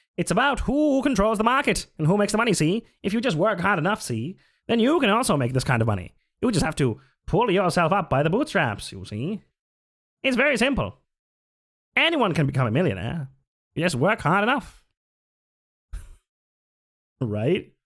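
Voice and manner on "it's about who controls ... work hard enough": put-on old-time 1920s radio announcer voice. Demonstrating a capitalist voice, in a 1920s radio announcer voice. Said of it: "twenties radio announcer".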